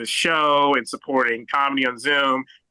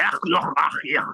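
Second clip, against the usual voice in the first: put-on polite, stammered hesitation filler in a Scottish accent; 2 semitones higher than usual. Retelling how polite staff apologized about shutting down, in a Scottish accent. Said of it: "it's that Scottish dialect, so it's like".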